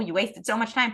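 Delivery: normal talking voice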